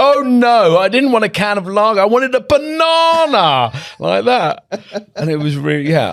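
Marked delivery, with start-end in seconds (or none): 0.0-3.7 very high, loud, high-pitched, emphatic voice. Retelling being handed an unwanted can of lager, re-enacting a loud protest. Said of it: "I had to say really loudly".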